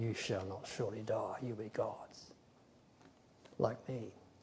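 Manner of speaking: hushed, very quiet, hissing snake voice. A speaker quotes the serpent's words of temptation, in a hissing serpent voice. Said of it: "he comes out with the hiss of the serpent".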